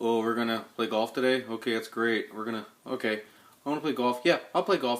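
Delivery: flat, level, one-dimensional, personality-free monotone. Show how an actor you find boring talks in every movie, imitating a monotone actor. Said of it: "one-dimensional, monotone".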